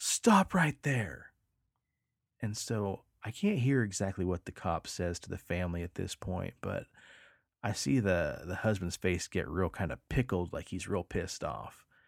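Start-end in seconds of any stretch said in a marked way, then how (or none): 0.0-1.3 acted-out, loud, high screamed shouting. Recounting a cop running after a truck; retelling a cop's scream. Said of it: "he screams".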